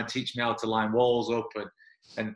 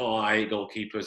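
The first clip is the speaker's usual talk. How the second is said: mock joking delivery. Recalling what was said to him on the first day, retelling a joking remark. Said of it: "jokingly to me".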